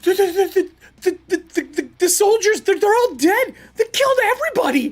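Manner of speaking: frantic, panicked stammering. Voicing a fleeing man answering questions: panicked stammering. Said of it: "This man is panicked".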